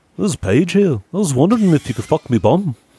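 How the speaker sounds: very high put-on Liverpool accent. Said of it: "She's [name] now".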